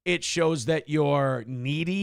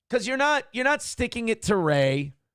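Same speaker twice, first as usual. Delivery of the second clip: plain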